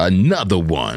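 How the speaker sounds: tag line called out in DJ drop style. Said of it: "You do got a D J voice".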